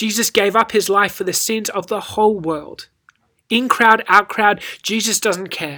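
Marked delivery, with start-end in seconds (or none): none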